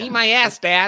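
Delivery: put-on high, slow, childlike voice like a seven-year-old. Mocking how another speaker just said it, imitating a seven-year-old saying it. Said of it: "you said it like a seven-year-old who just learned the phrase".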